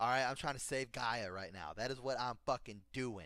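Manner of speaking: ordinary talk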